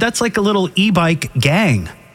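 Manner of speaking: ordinary delivery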